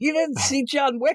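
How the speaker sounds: mock worked-up indignant disbelief, very high-pitched. Retelling a security guard scolding kids: imitating someone getting mad. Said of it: "he starts getting all mad at them".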